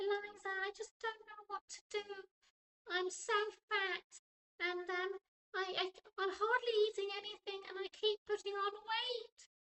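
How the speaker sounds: tiny, very high, little squeaky voice. Retelling what Sarah said to Eliza, imitating Sarah's little squeaky voice. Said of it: "she had this little squeaky voice".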